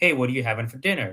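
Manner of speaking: normal talking voice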